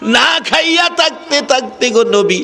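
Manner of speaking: put-on high, slow, pleading child's voice. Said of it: "বাচ্চারা বলে".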